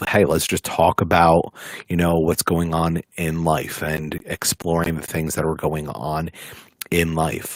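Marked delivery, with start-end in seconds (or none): none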